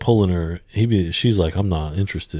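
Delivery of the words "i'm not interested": ordinary delivery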